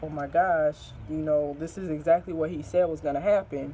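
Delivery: plain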